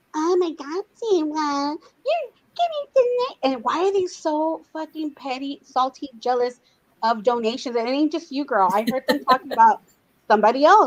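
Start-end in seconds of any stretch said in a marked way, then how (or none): 0.1-3.5 high, slow, fake, affected put-on voice. Mocking a streamer's put-on voice: imitating a put-on fake voice. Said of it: "maybe not her real voice because she's doing this thing".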